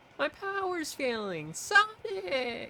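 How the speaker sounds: put-on loud yell with voice cracking. Imitating a game line, yelling so loud the mic peaks: imitating a loud shout with voice crack. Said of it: "I probably just peaked the mic".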